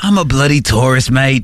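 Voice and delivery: put-on Australian accent on words bloody and mate. Imitating a guy from their car, the speaker puts on an Australian accent. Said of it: "We're doing like Australian accents".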